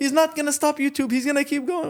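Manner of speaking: shouting voice. Retelling how a father yelled at the police: imitating someone yelling. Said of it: "He's yelling at the cop".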